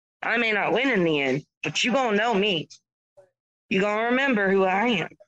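slow, drawling Southern accent. Performing a dramatic speech for listeners, in a southern drawl. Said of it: "Did you like the Southern drawl on that?".

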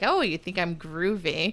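put-on sarcastic tone. Retelling how a man answered being called groovy, mock-sarcastic. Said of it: "I think that he was just being like".

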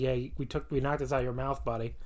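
usual speaking voice

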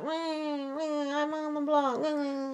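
very soft, very slow, hushed whine, long drawn-out "I'm". Retelling what a woman said while Kyle was trying to console her, imitating her whining. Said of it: "She was whining".

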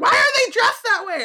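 put-on shrill, very high, loud child yelling. Describing an 8-year-old cousin watching the movie, retelling a kid's yelling. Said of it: "she started yelling about it".

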